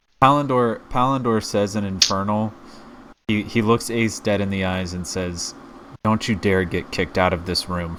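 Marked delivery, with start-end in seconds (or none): 6.0-8.0 hushed, whispered voice. Speaking as a character who looks another in the eyes: whispering. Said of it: "and I whisper it".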